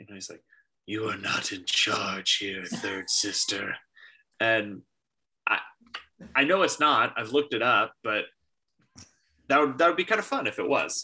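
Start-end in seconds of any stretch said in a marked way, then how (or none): 0.9-3.8 deep, gravelly voice. Imitating a villain who speaks to the third sister: Fifth Brother's gravelly voice. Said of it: "the gravelly voice that he has".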